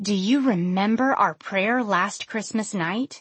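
plain

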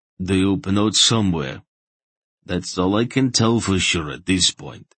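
ordinary delivery, nothing marked

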